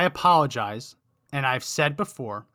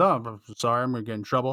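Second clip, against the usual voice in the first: mock mumbling, lower pitch; 3 semitones lower than usual. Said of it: "he then mumbles and he says".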